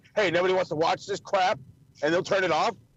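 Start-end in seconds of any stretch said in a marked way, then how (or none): none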